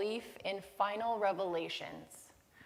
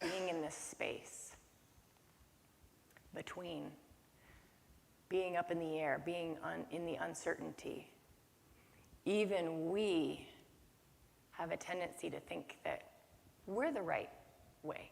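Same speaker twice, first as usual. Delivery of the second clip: deliberately slow delivery, quieter; 3 semitones lower, 8 dB quieter than usual. Speaker on a thoughtful topic, talking slowly on purpose. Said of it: "I'm talking slowly on purpose today".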